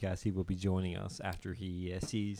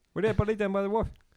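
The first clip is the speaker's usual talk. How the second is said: loud, high-pitched, fake Newfoundland accent; 12 semitones higher, 8 dB louder than usual. Podcast hosts trade Newfoundland lines; one tries a fake Newfoundland Bayman accent. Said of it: "that's a little closer".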